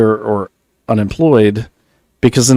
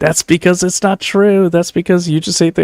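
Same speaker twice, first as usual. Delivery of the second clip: high-pitched yelling; 9 semitones higher than usual. Retelling how his wife Naomi argued back, imitating Naomi yelling. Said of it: "she's yelling and saying".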